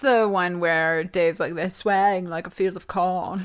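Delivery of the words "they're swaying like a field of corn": fake put-on British accent. Quoting someone's line about the crowd, put-on british accent. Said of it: "That was my British accent".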